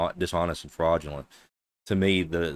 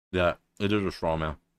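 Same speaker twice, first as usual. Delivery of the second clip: speaking with mouth full of food. In a heated debate, a speaker apologizes and keeps talking while eating: talking with mouth full. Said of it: "I have my mouth full".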